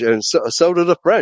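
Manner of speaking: ordinary talk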